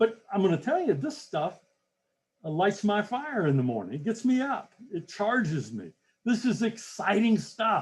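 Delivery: excited, fast and loud. Explaining why goals matter to listeners: excited, fast and loud. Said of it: "talking too fast or too loud or too enthusiastically".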